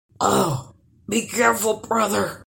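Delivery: whimpering, begging, pleading voice. A troll responds to a threat of being cut with an axe: whimpering. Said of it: "whimpered the last troll".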